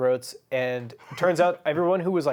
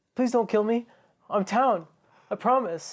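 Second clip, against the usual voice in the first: hammed-up, high, pleading tone; 7 semitones higher than usual. Retelling a game where a player begs not to be killed: imitating Zane's played-up plea. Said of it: "playing it up because this is his impersonation".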